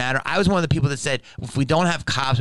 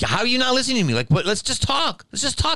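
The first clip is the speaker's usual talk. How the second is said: mock, very high, swooping raised arguing voice; 11 semitones higher than usual. Speaker retells a tense moment with a guy, retelling a raised voice. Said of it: "I raised my voice a couple of times".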